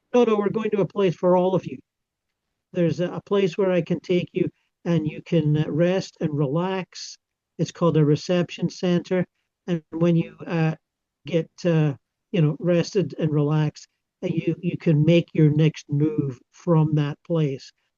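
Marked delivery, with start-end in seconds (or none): none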